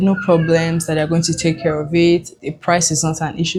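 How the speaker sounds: ordinary delivery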